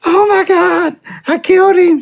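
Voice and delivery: mock, very high, drawn-out hysterical wail. Retelling his mom's reaction to his signed paperwork, the speaker imitates his hysterical mom. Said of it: "She's like all hysterical".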